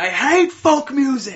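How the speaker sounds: high, loud, shrill, drawn-out ranting scream. Describing a movie scene, the speaker acts out the character screaming: retelling a scream. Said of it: "he just starts screaming".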